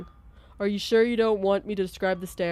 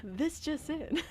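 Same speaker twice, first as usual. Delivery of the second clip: hushed, soft, pitched-up TV announcer voice; 8 semitones higher, 10 dB quieter than usual. Warming up different character voices, doing the tv announcer voice. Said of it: "And the T V announcer".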